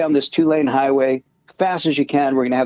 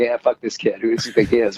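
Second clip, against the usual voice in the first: mock laughing while talking, mocking tone, lower; 3 semitones lower than usual. Retelling how a driver on the right reacted: imitating someone laughing while talking. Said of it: "driving kinda laughing like".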